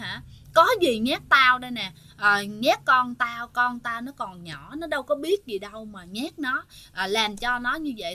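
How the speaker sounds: normal talking voice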